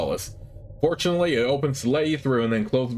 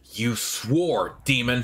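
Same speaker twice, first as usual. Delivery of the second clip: fierce, angry snarl through the words. Narrator voicing a woman speaking to a demon, snarling. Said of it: "She snarls".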